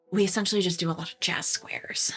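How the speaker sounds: hushed whispering voice. Voicing a drama troupe member leaning close to confide: whispering. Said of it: "is whispering, and she's like".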